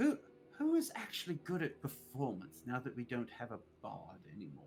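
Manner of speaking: dropping into a stage whisper. Speaking in character, asking the party who can perform now: whispering to the party. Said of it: "Rexnor just kinda whispers to the party".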